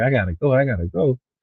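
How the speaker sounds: edgy, pressed urgency. Imitating someone desperate to leave: imitating someone in a hurry. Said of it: "usually these dudes ain't that pressed".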